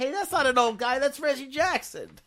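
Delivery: high, loud, indignant angry yell. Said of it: "It actually made me mad".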